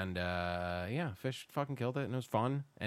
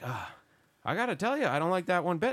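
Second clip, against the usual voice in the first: loud, high put-on Canadian accent; 7 semitones higher, 5 dB louder than usual. Retelling what a canadian guy at a show said: imitating a canadian accent. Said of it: "you sound like you're on the Trailer Park Boys".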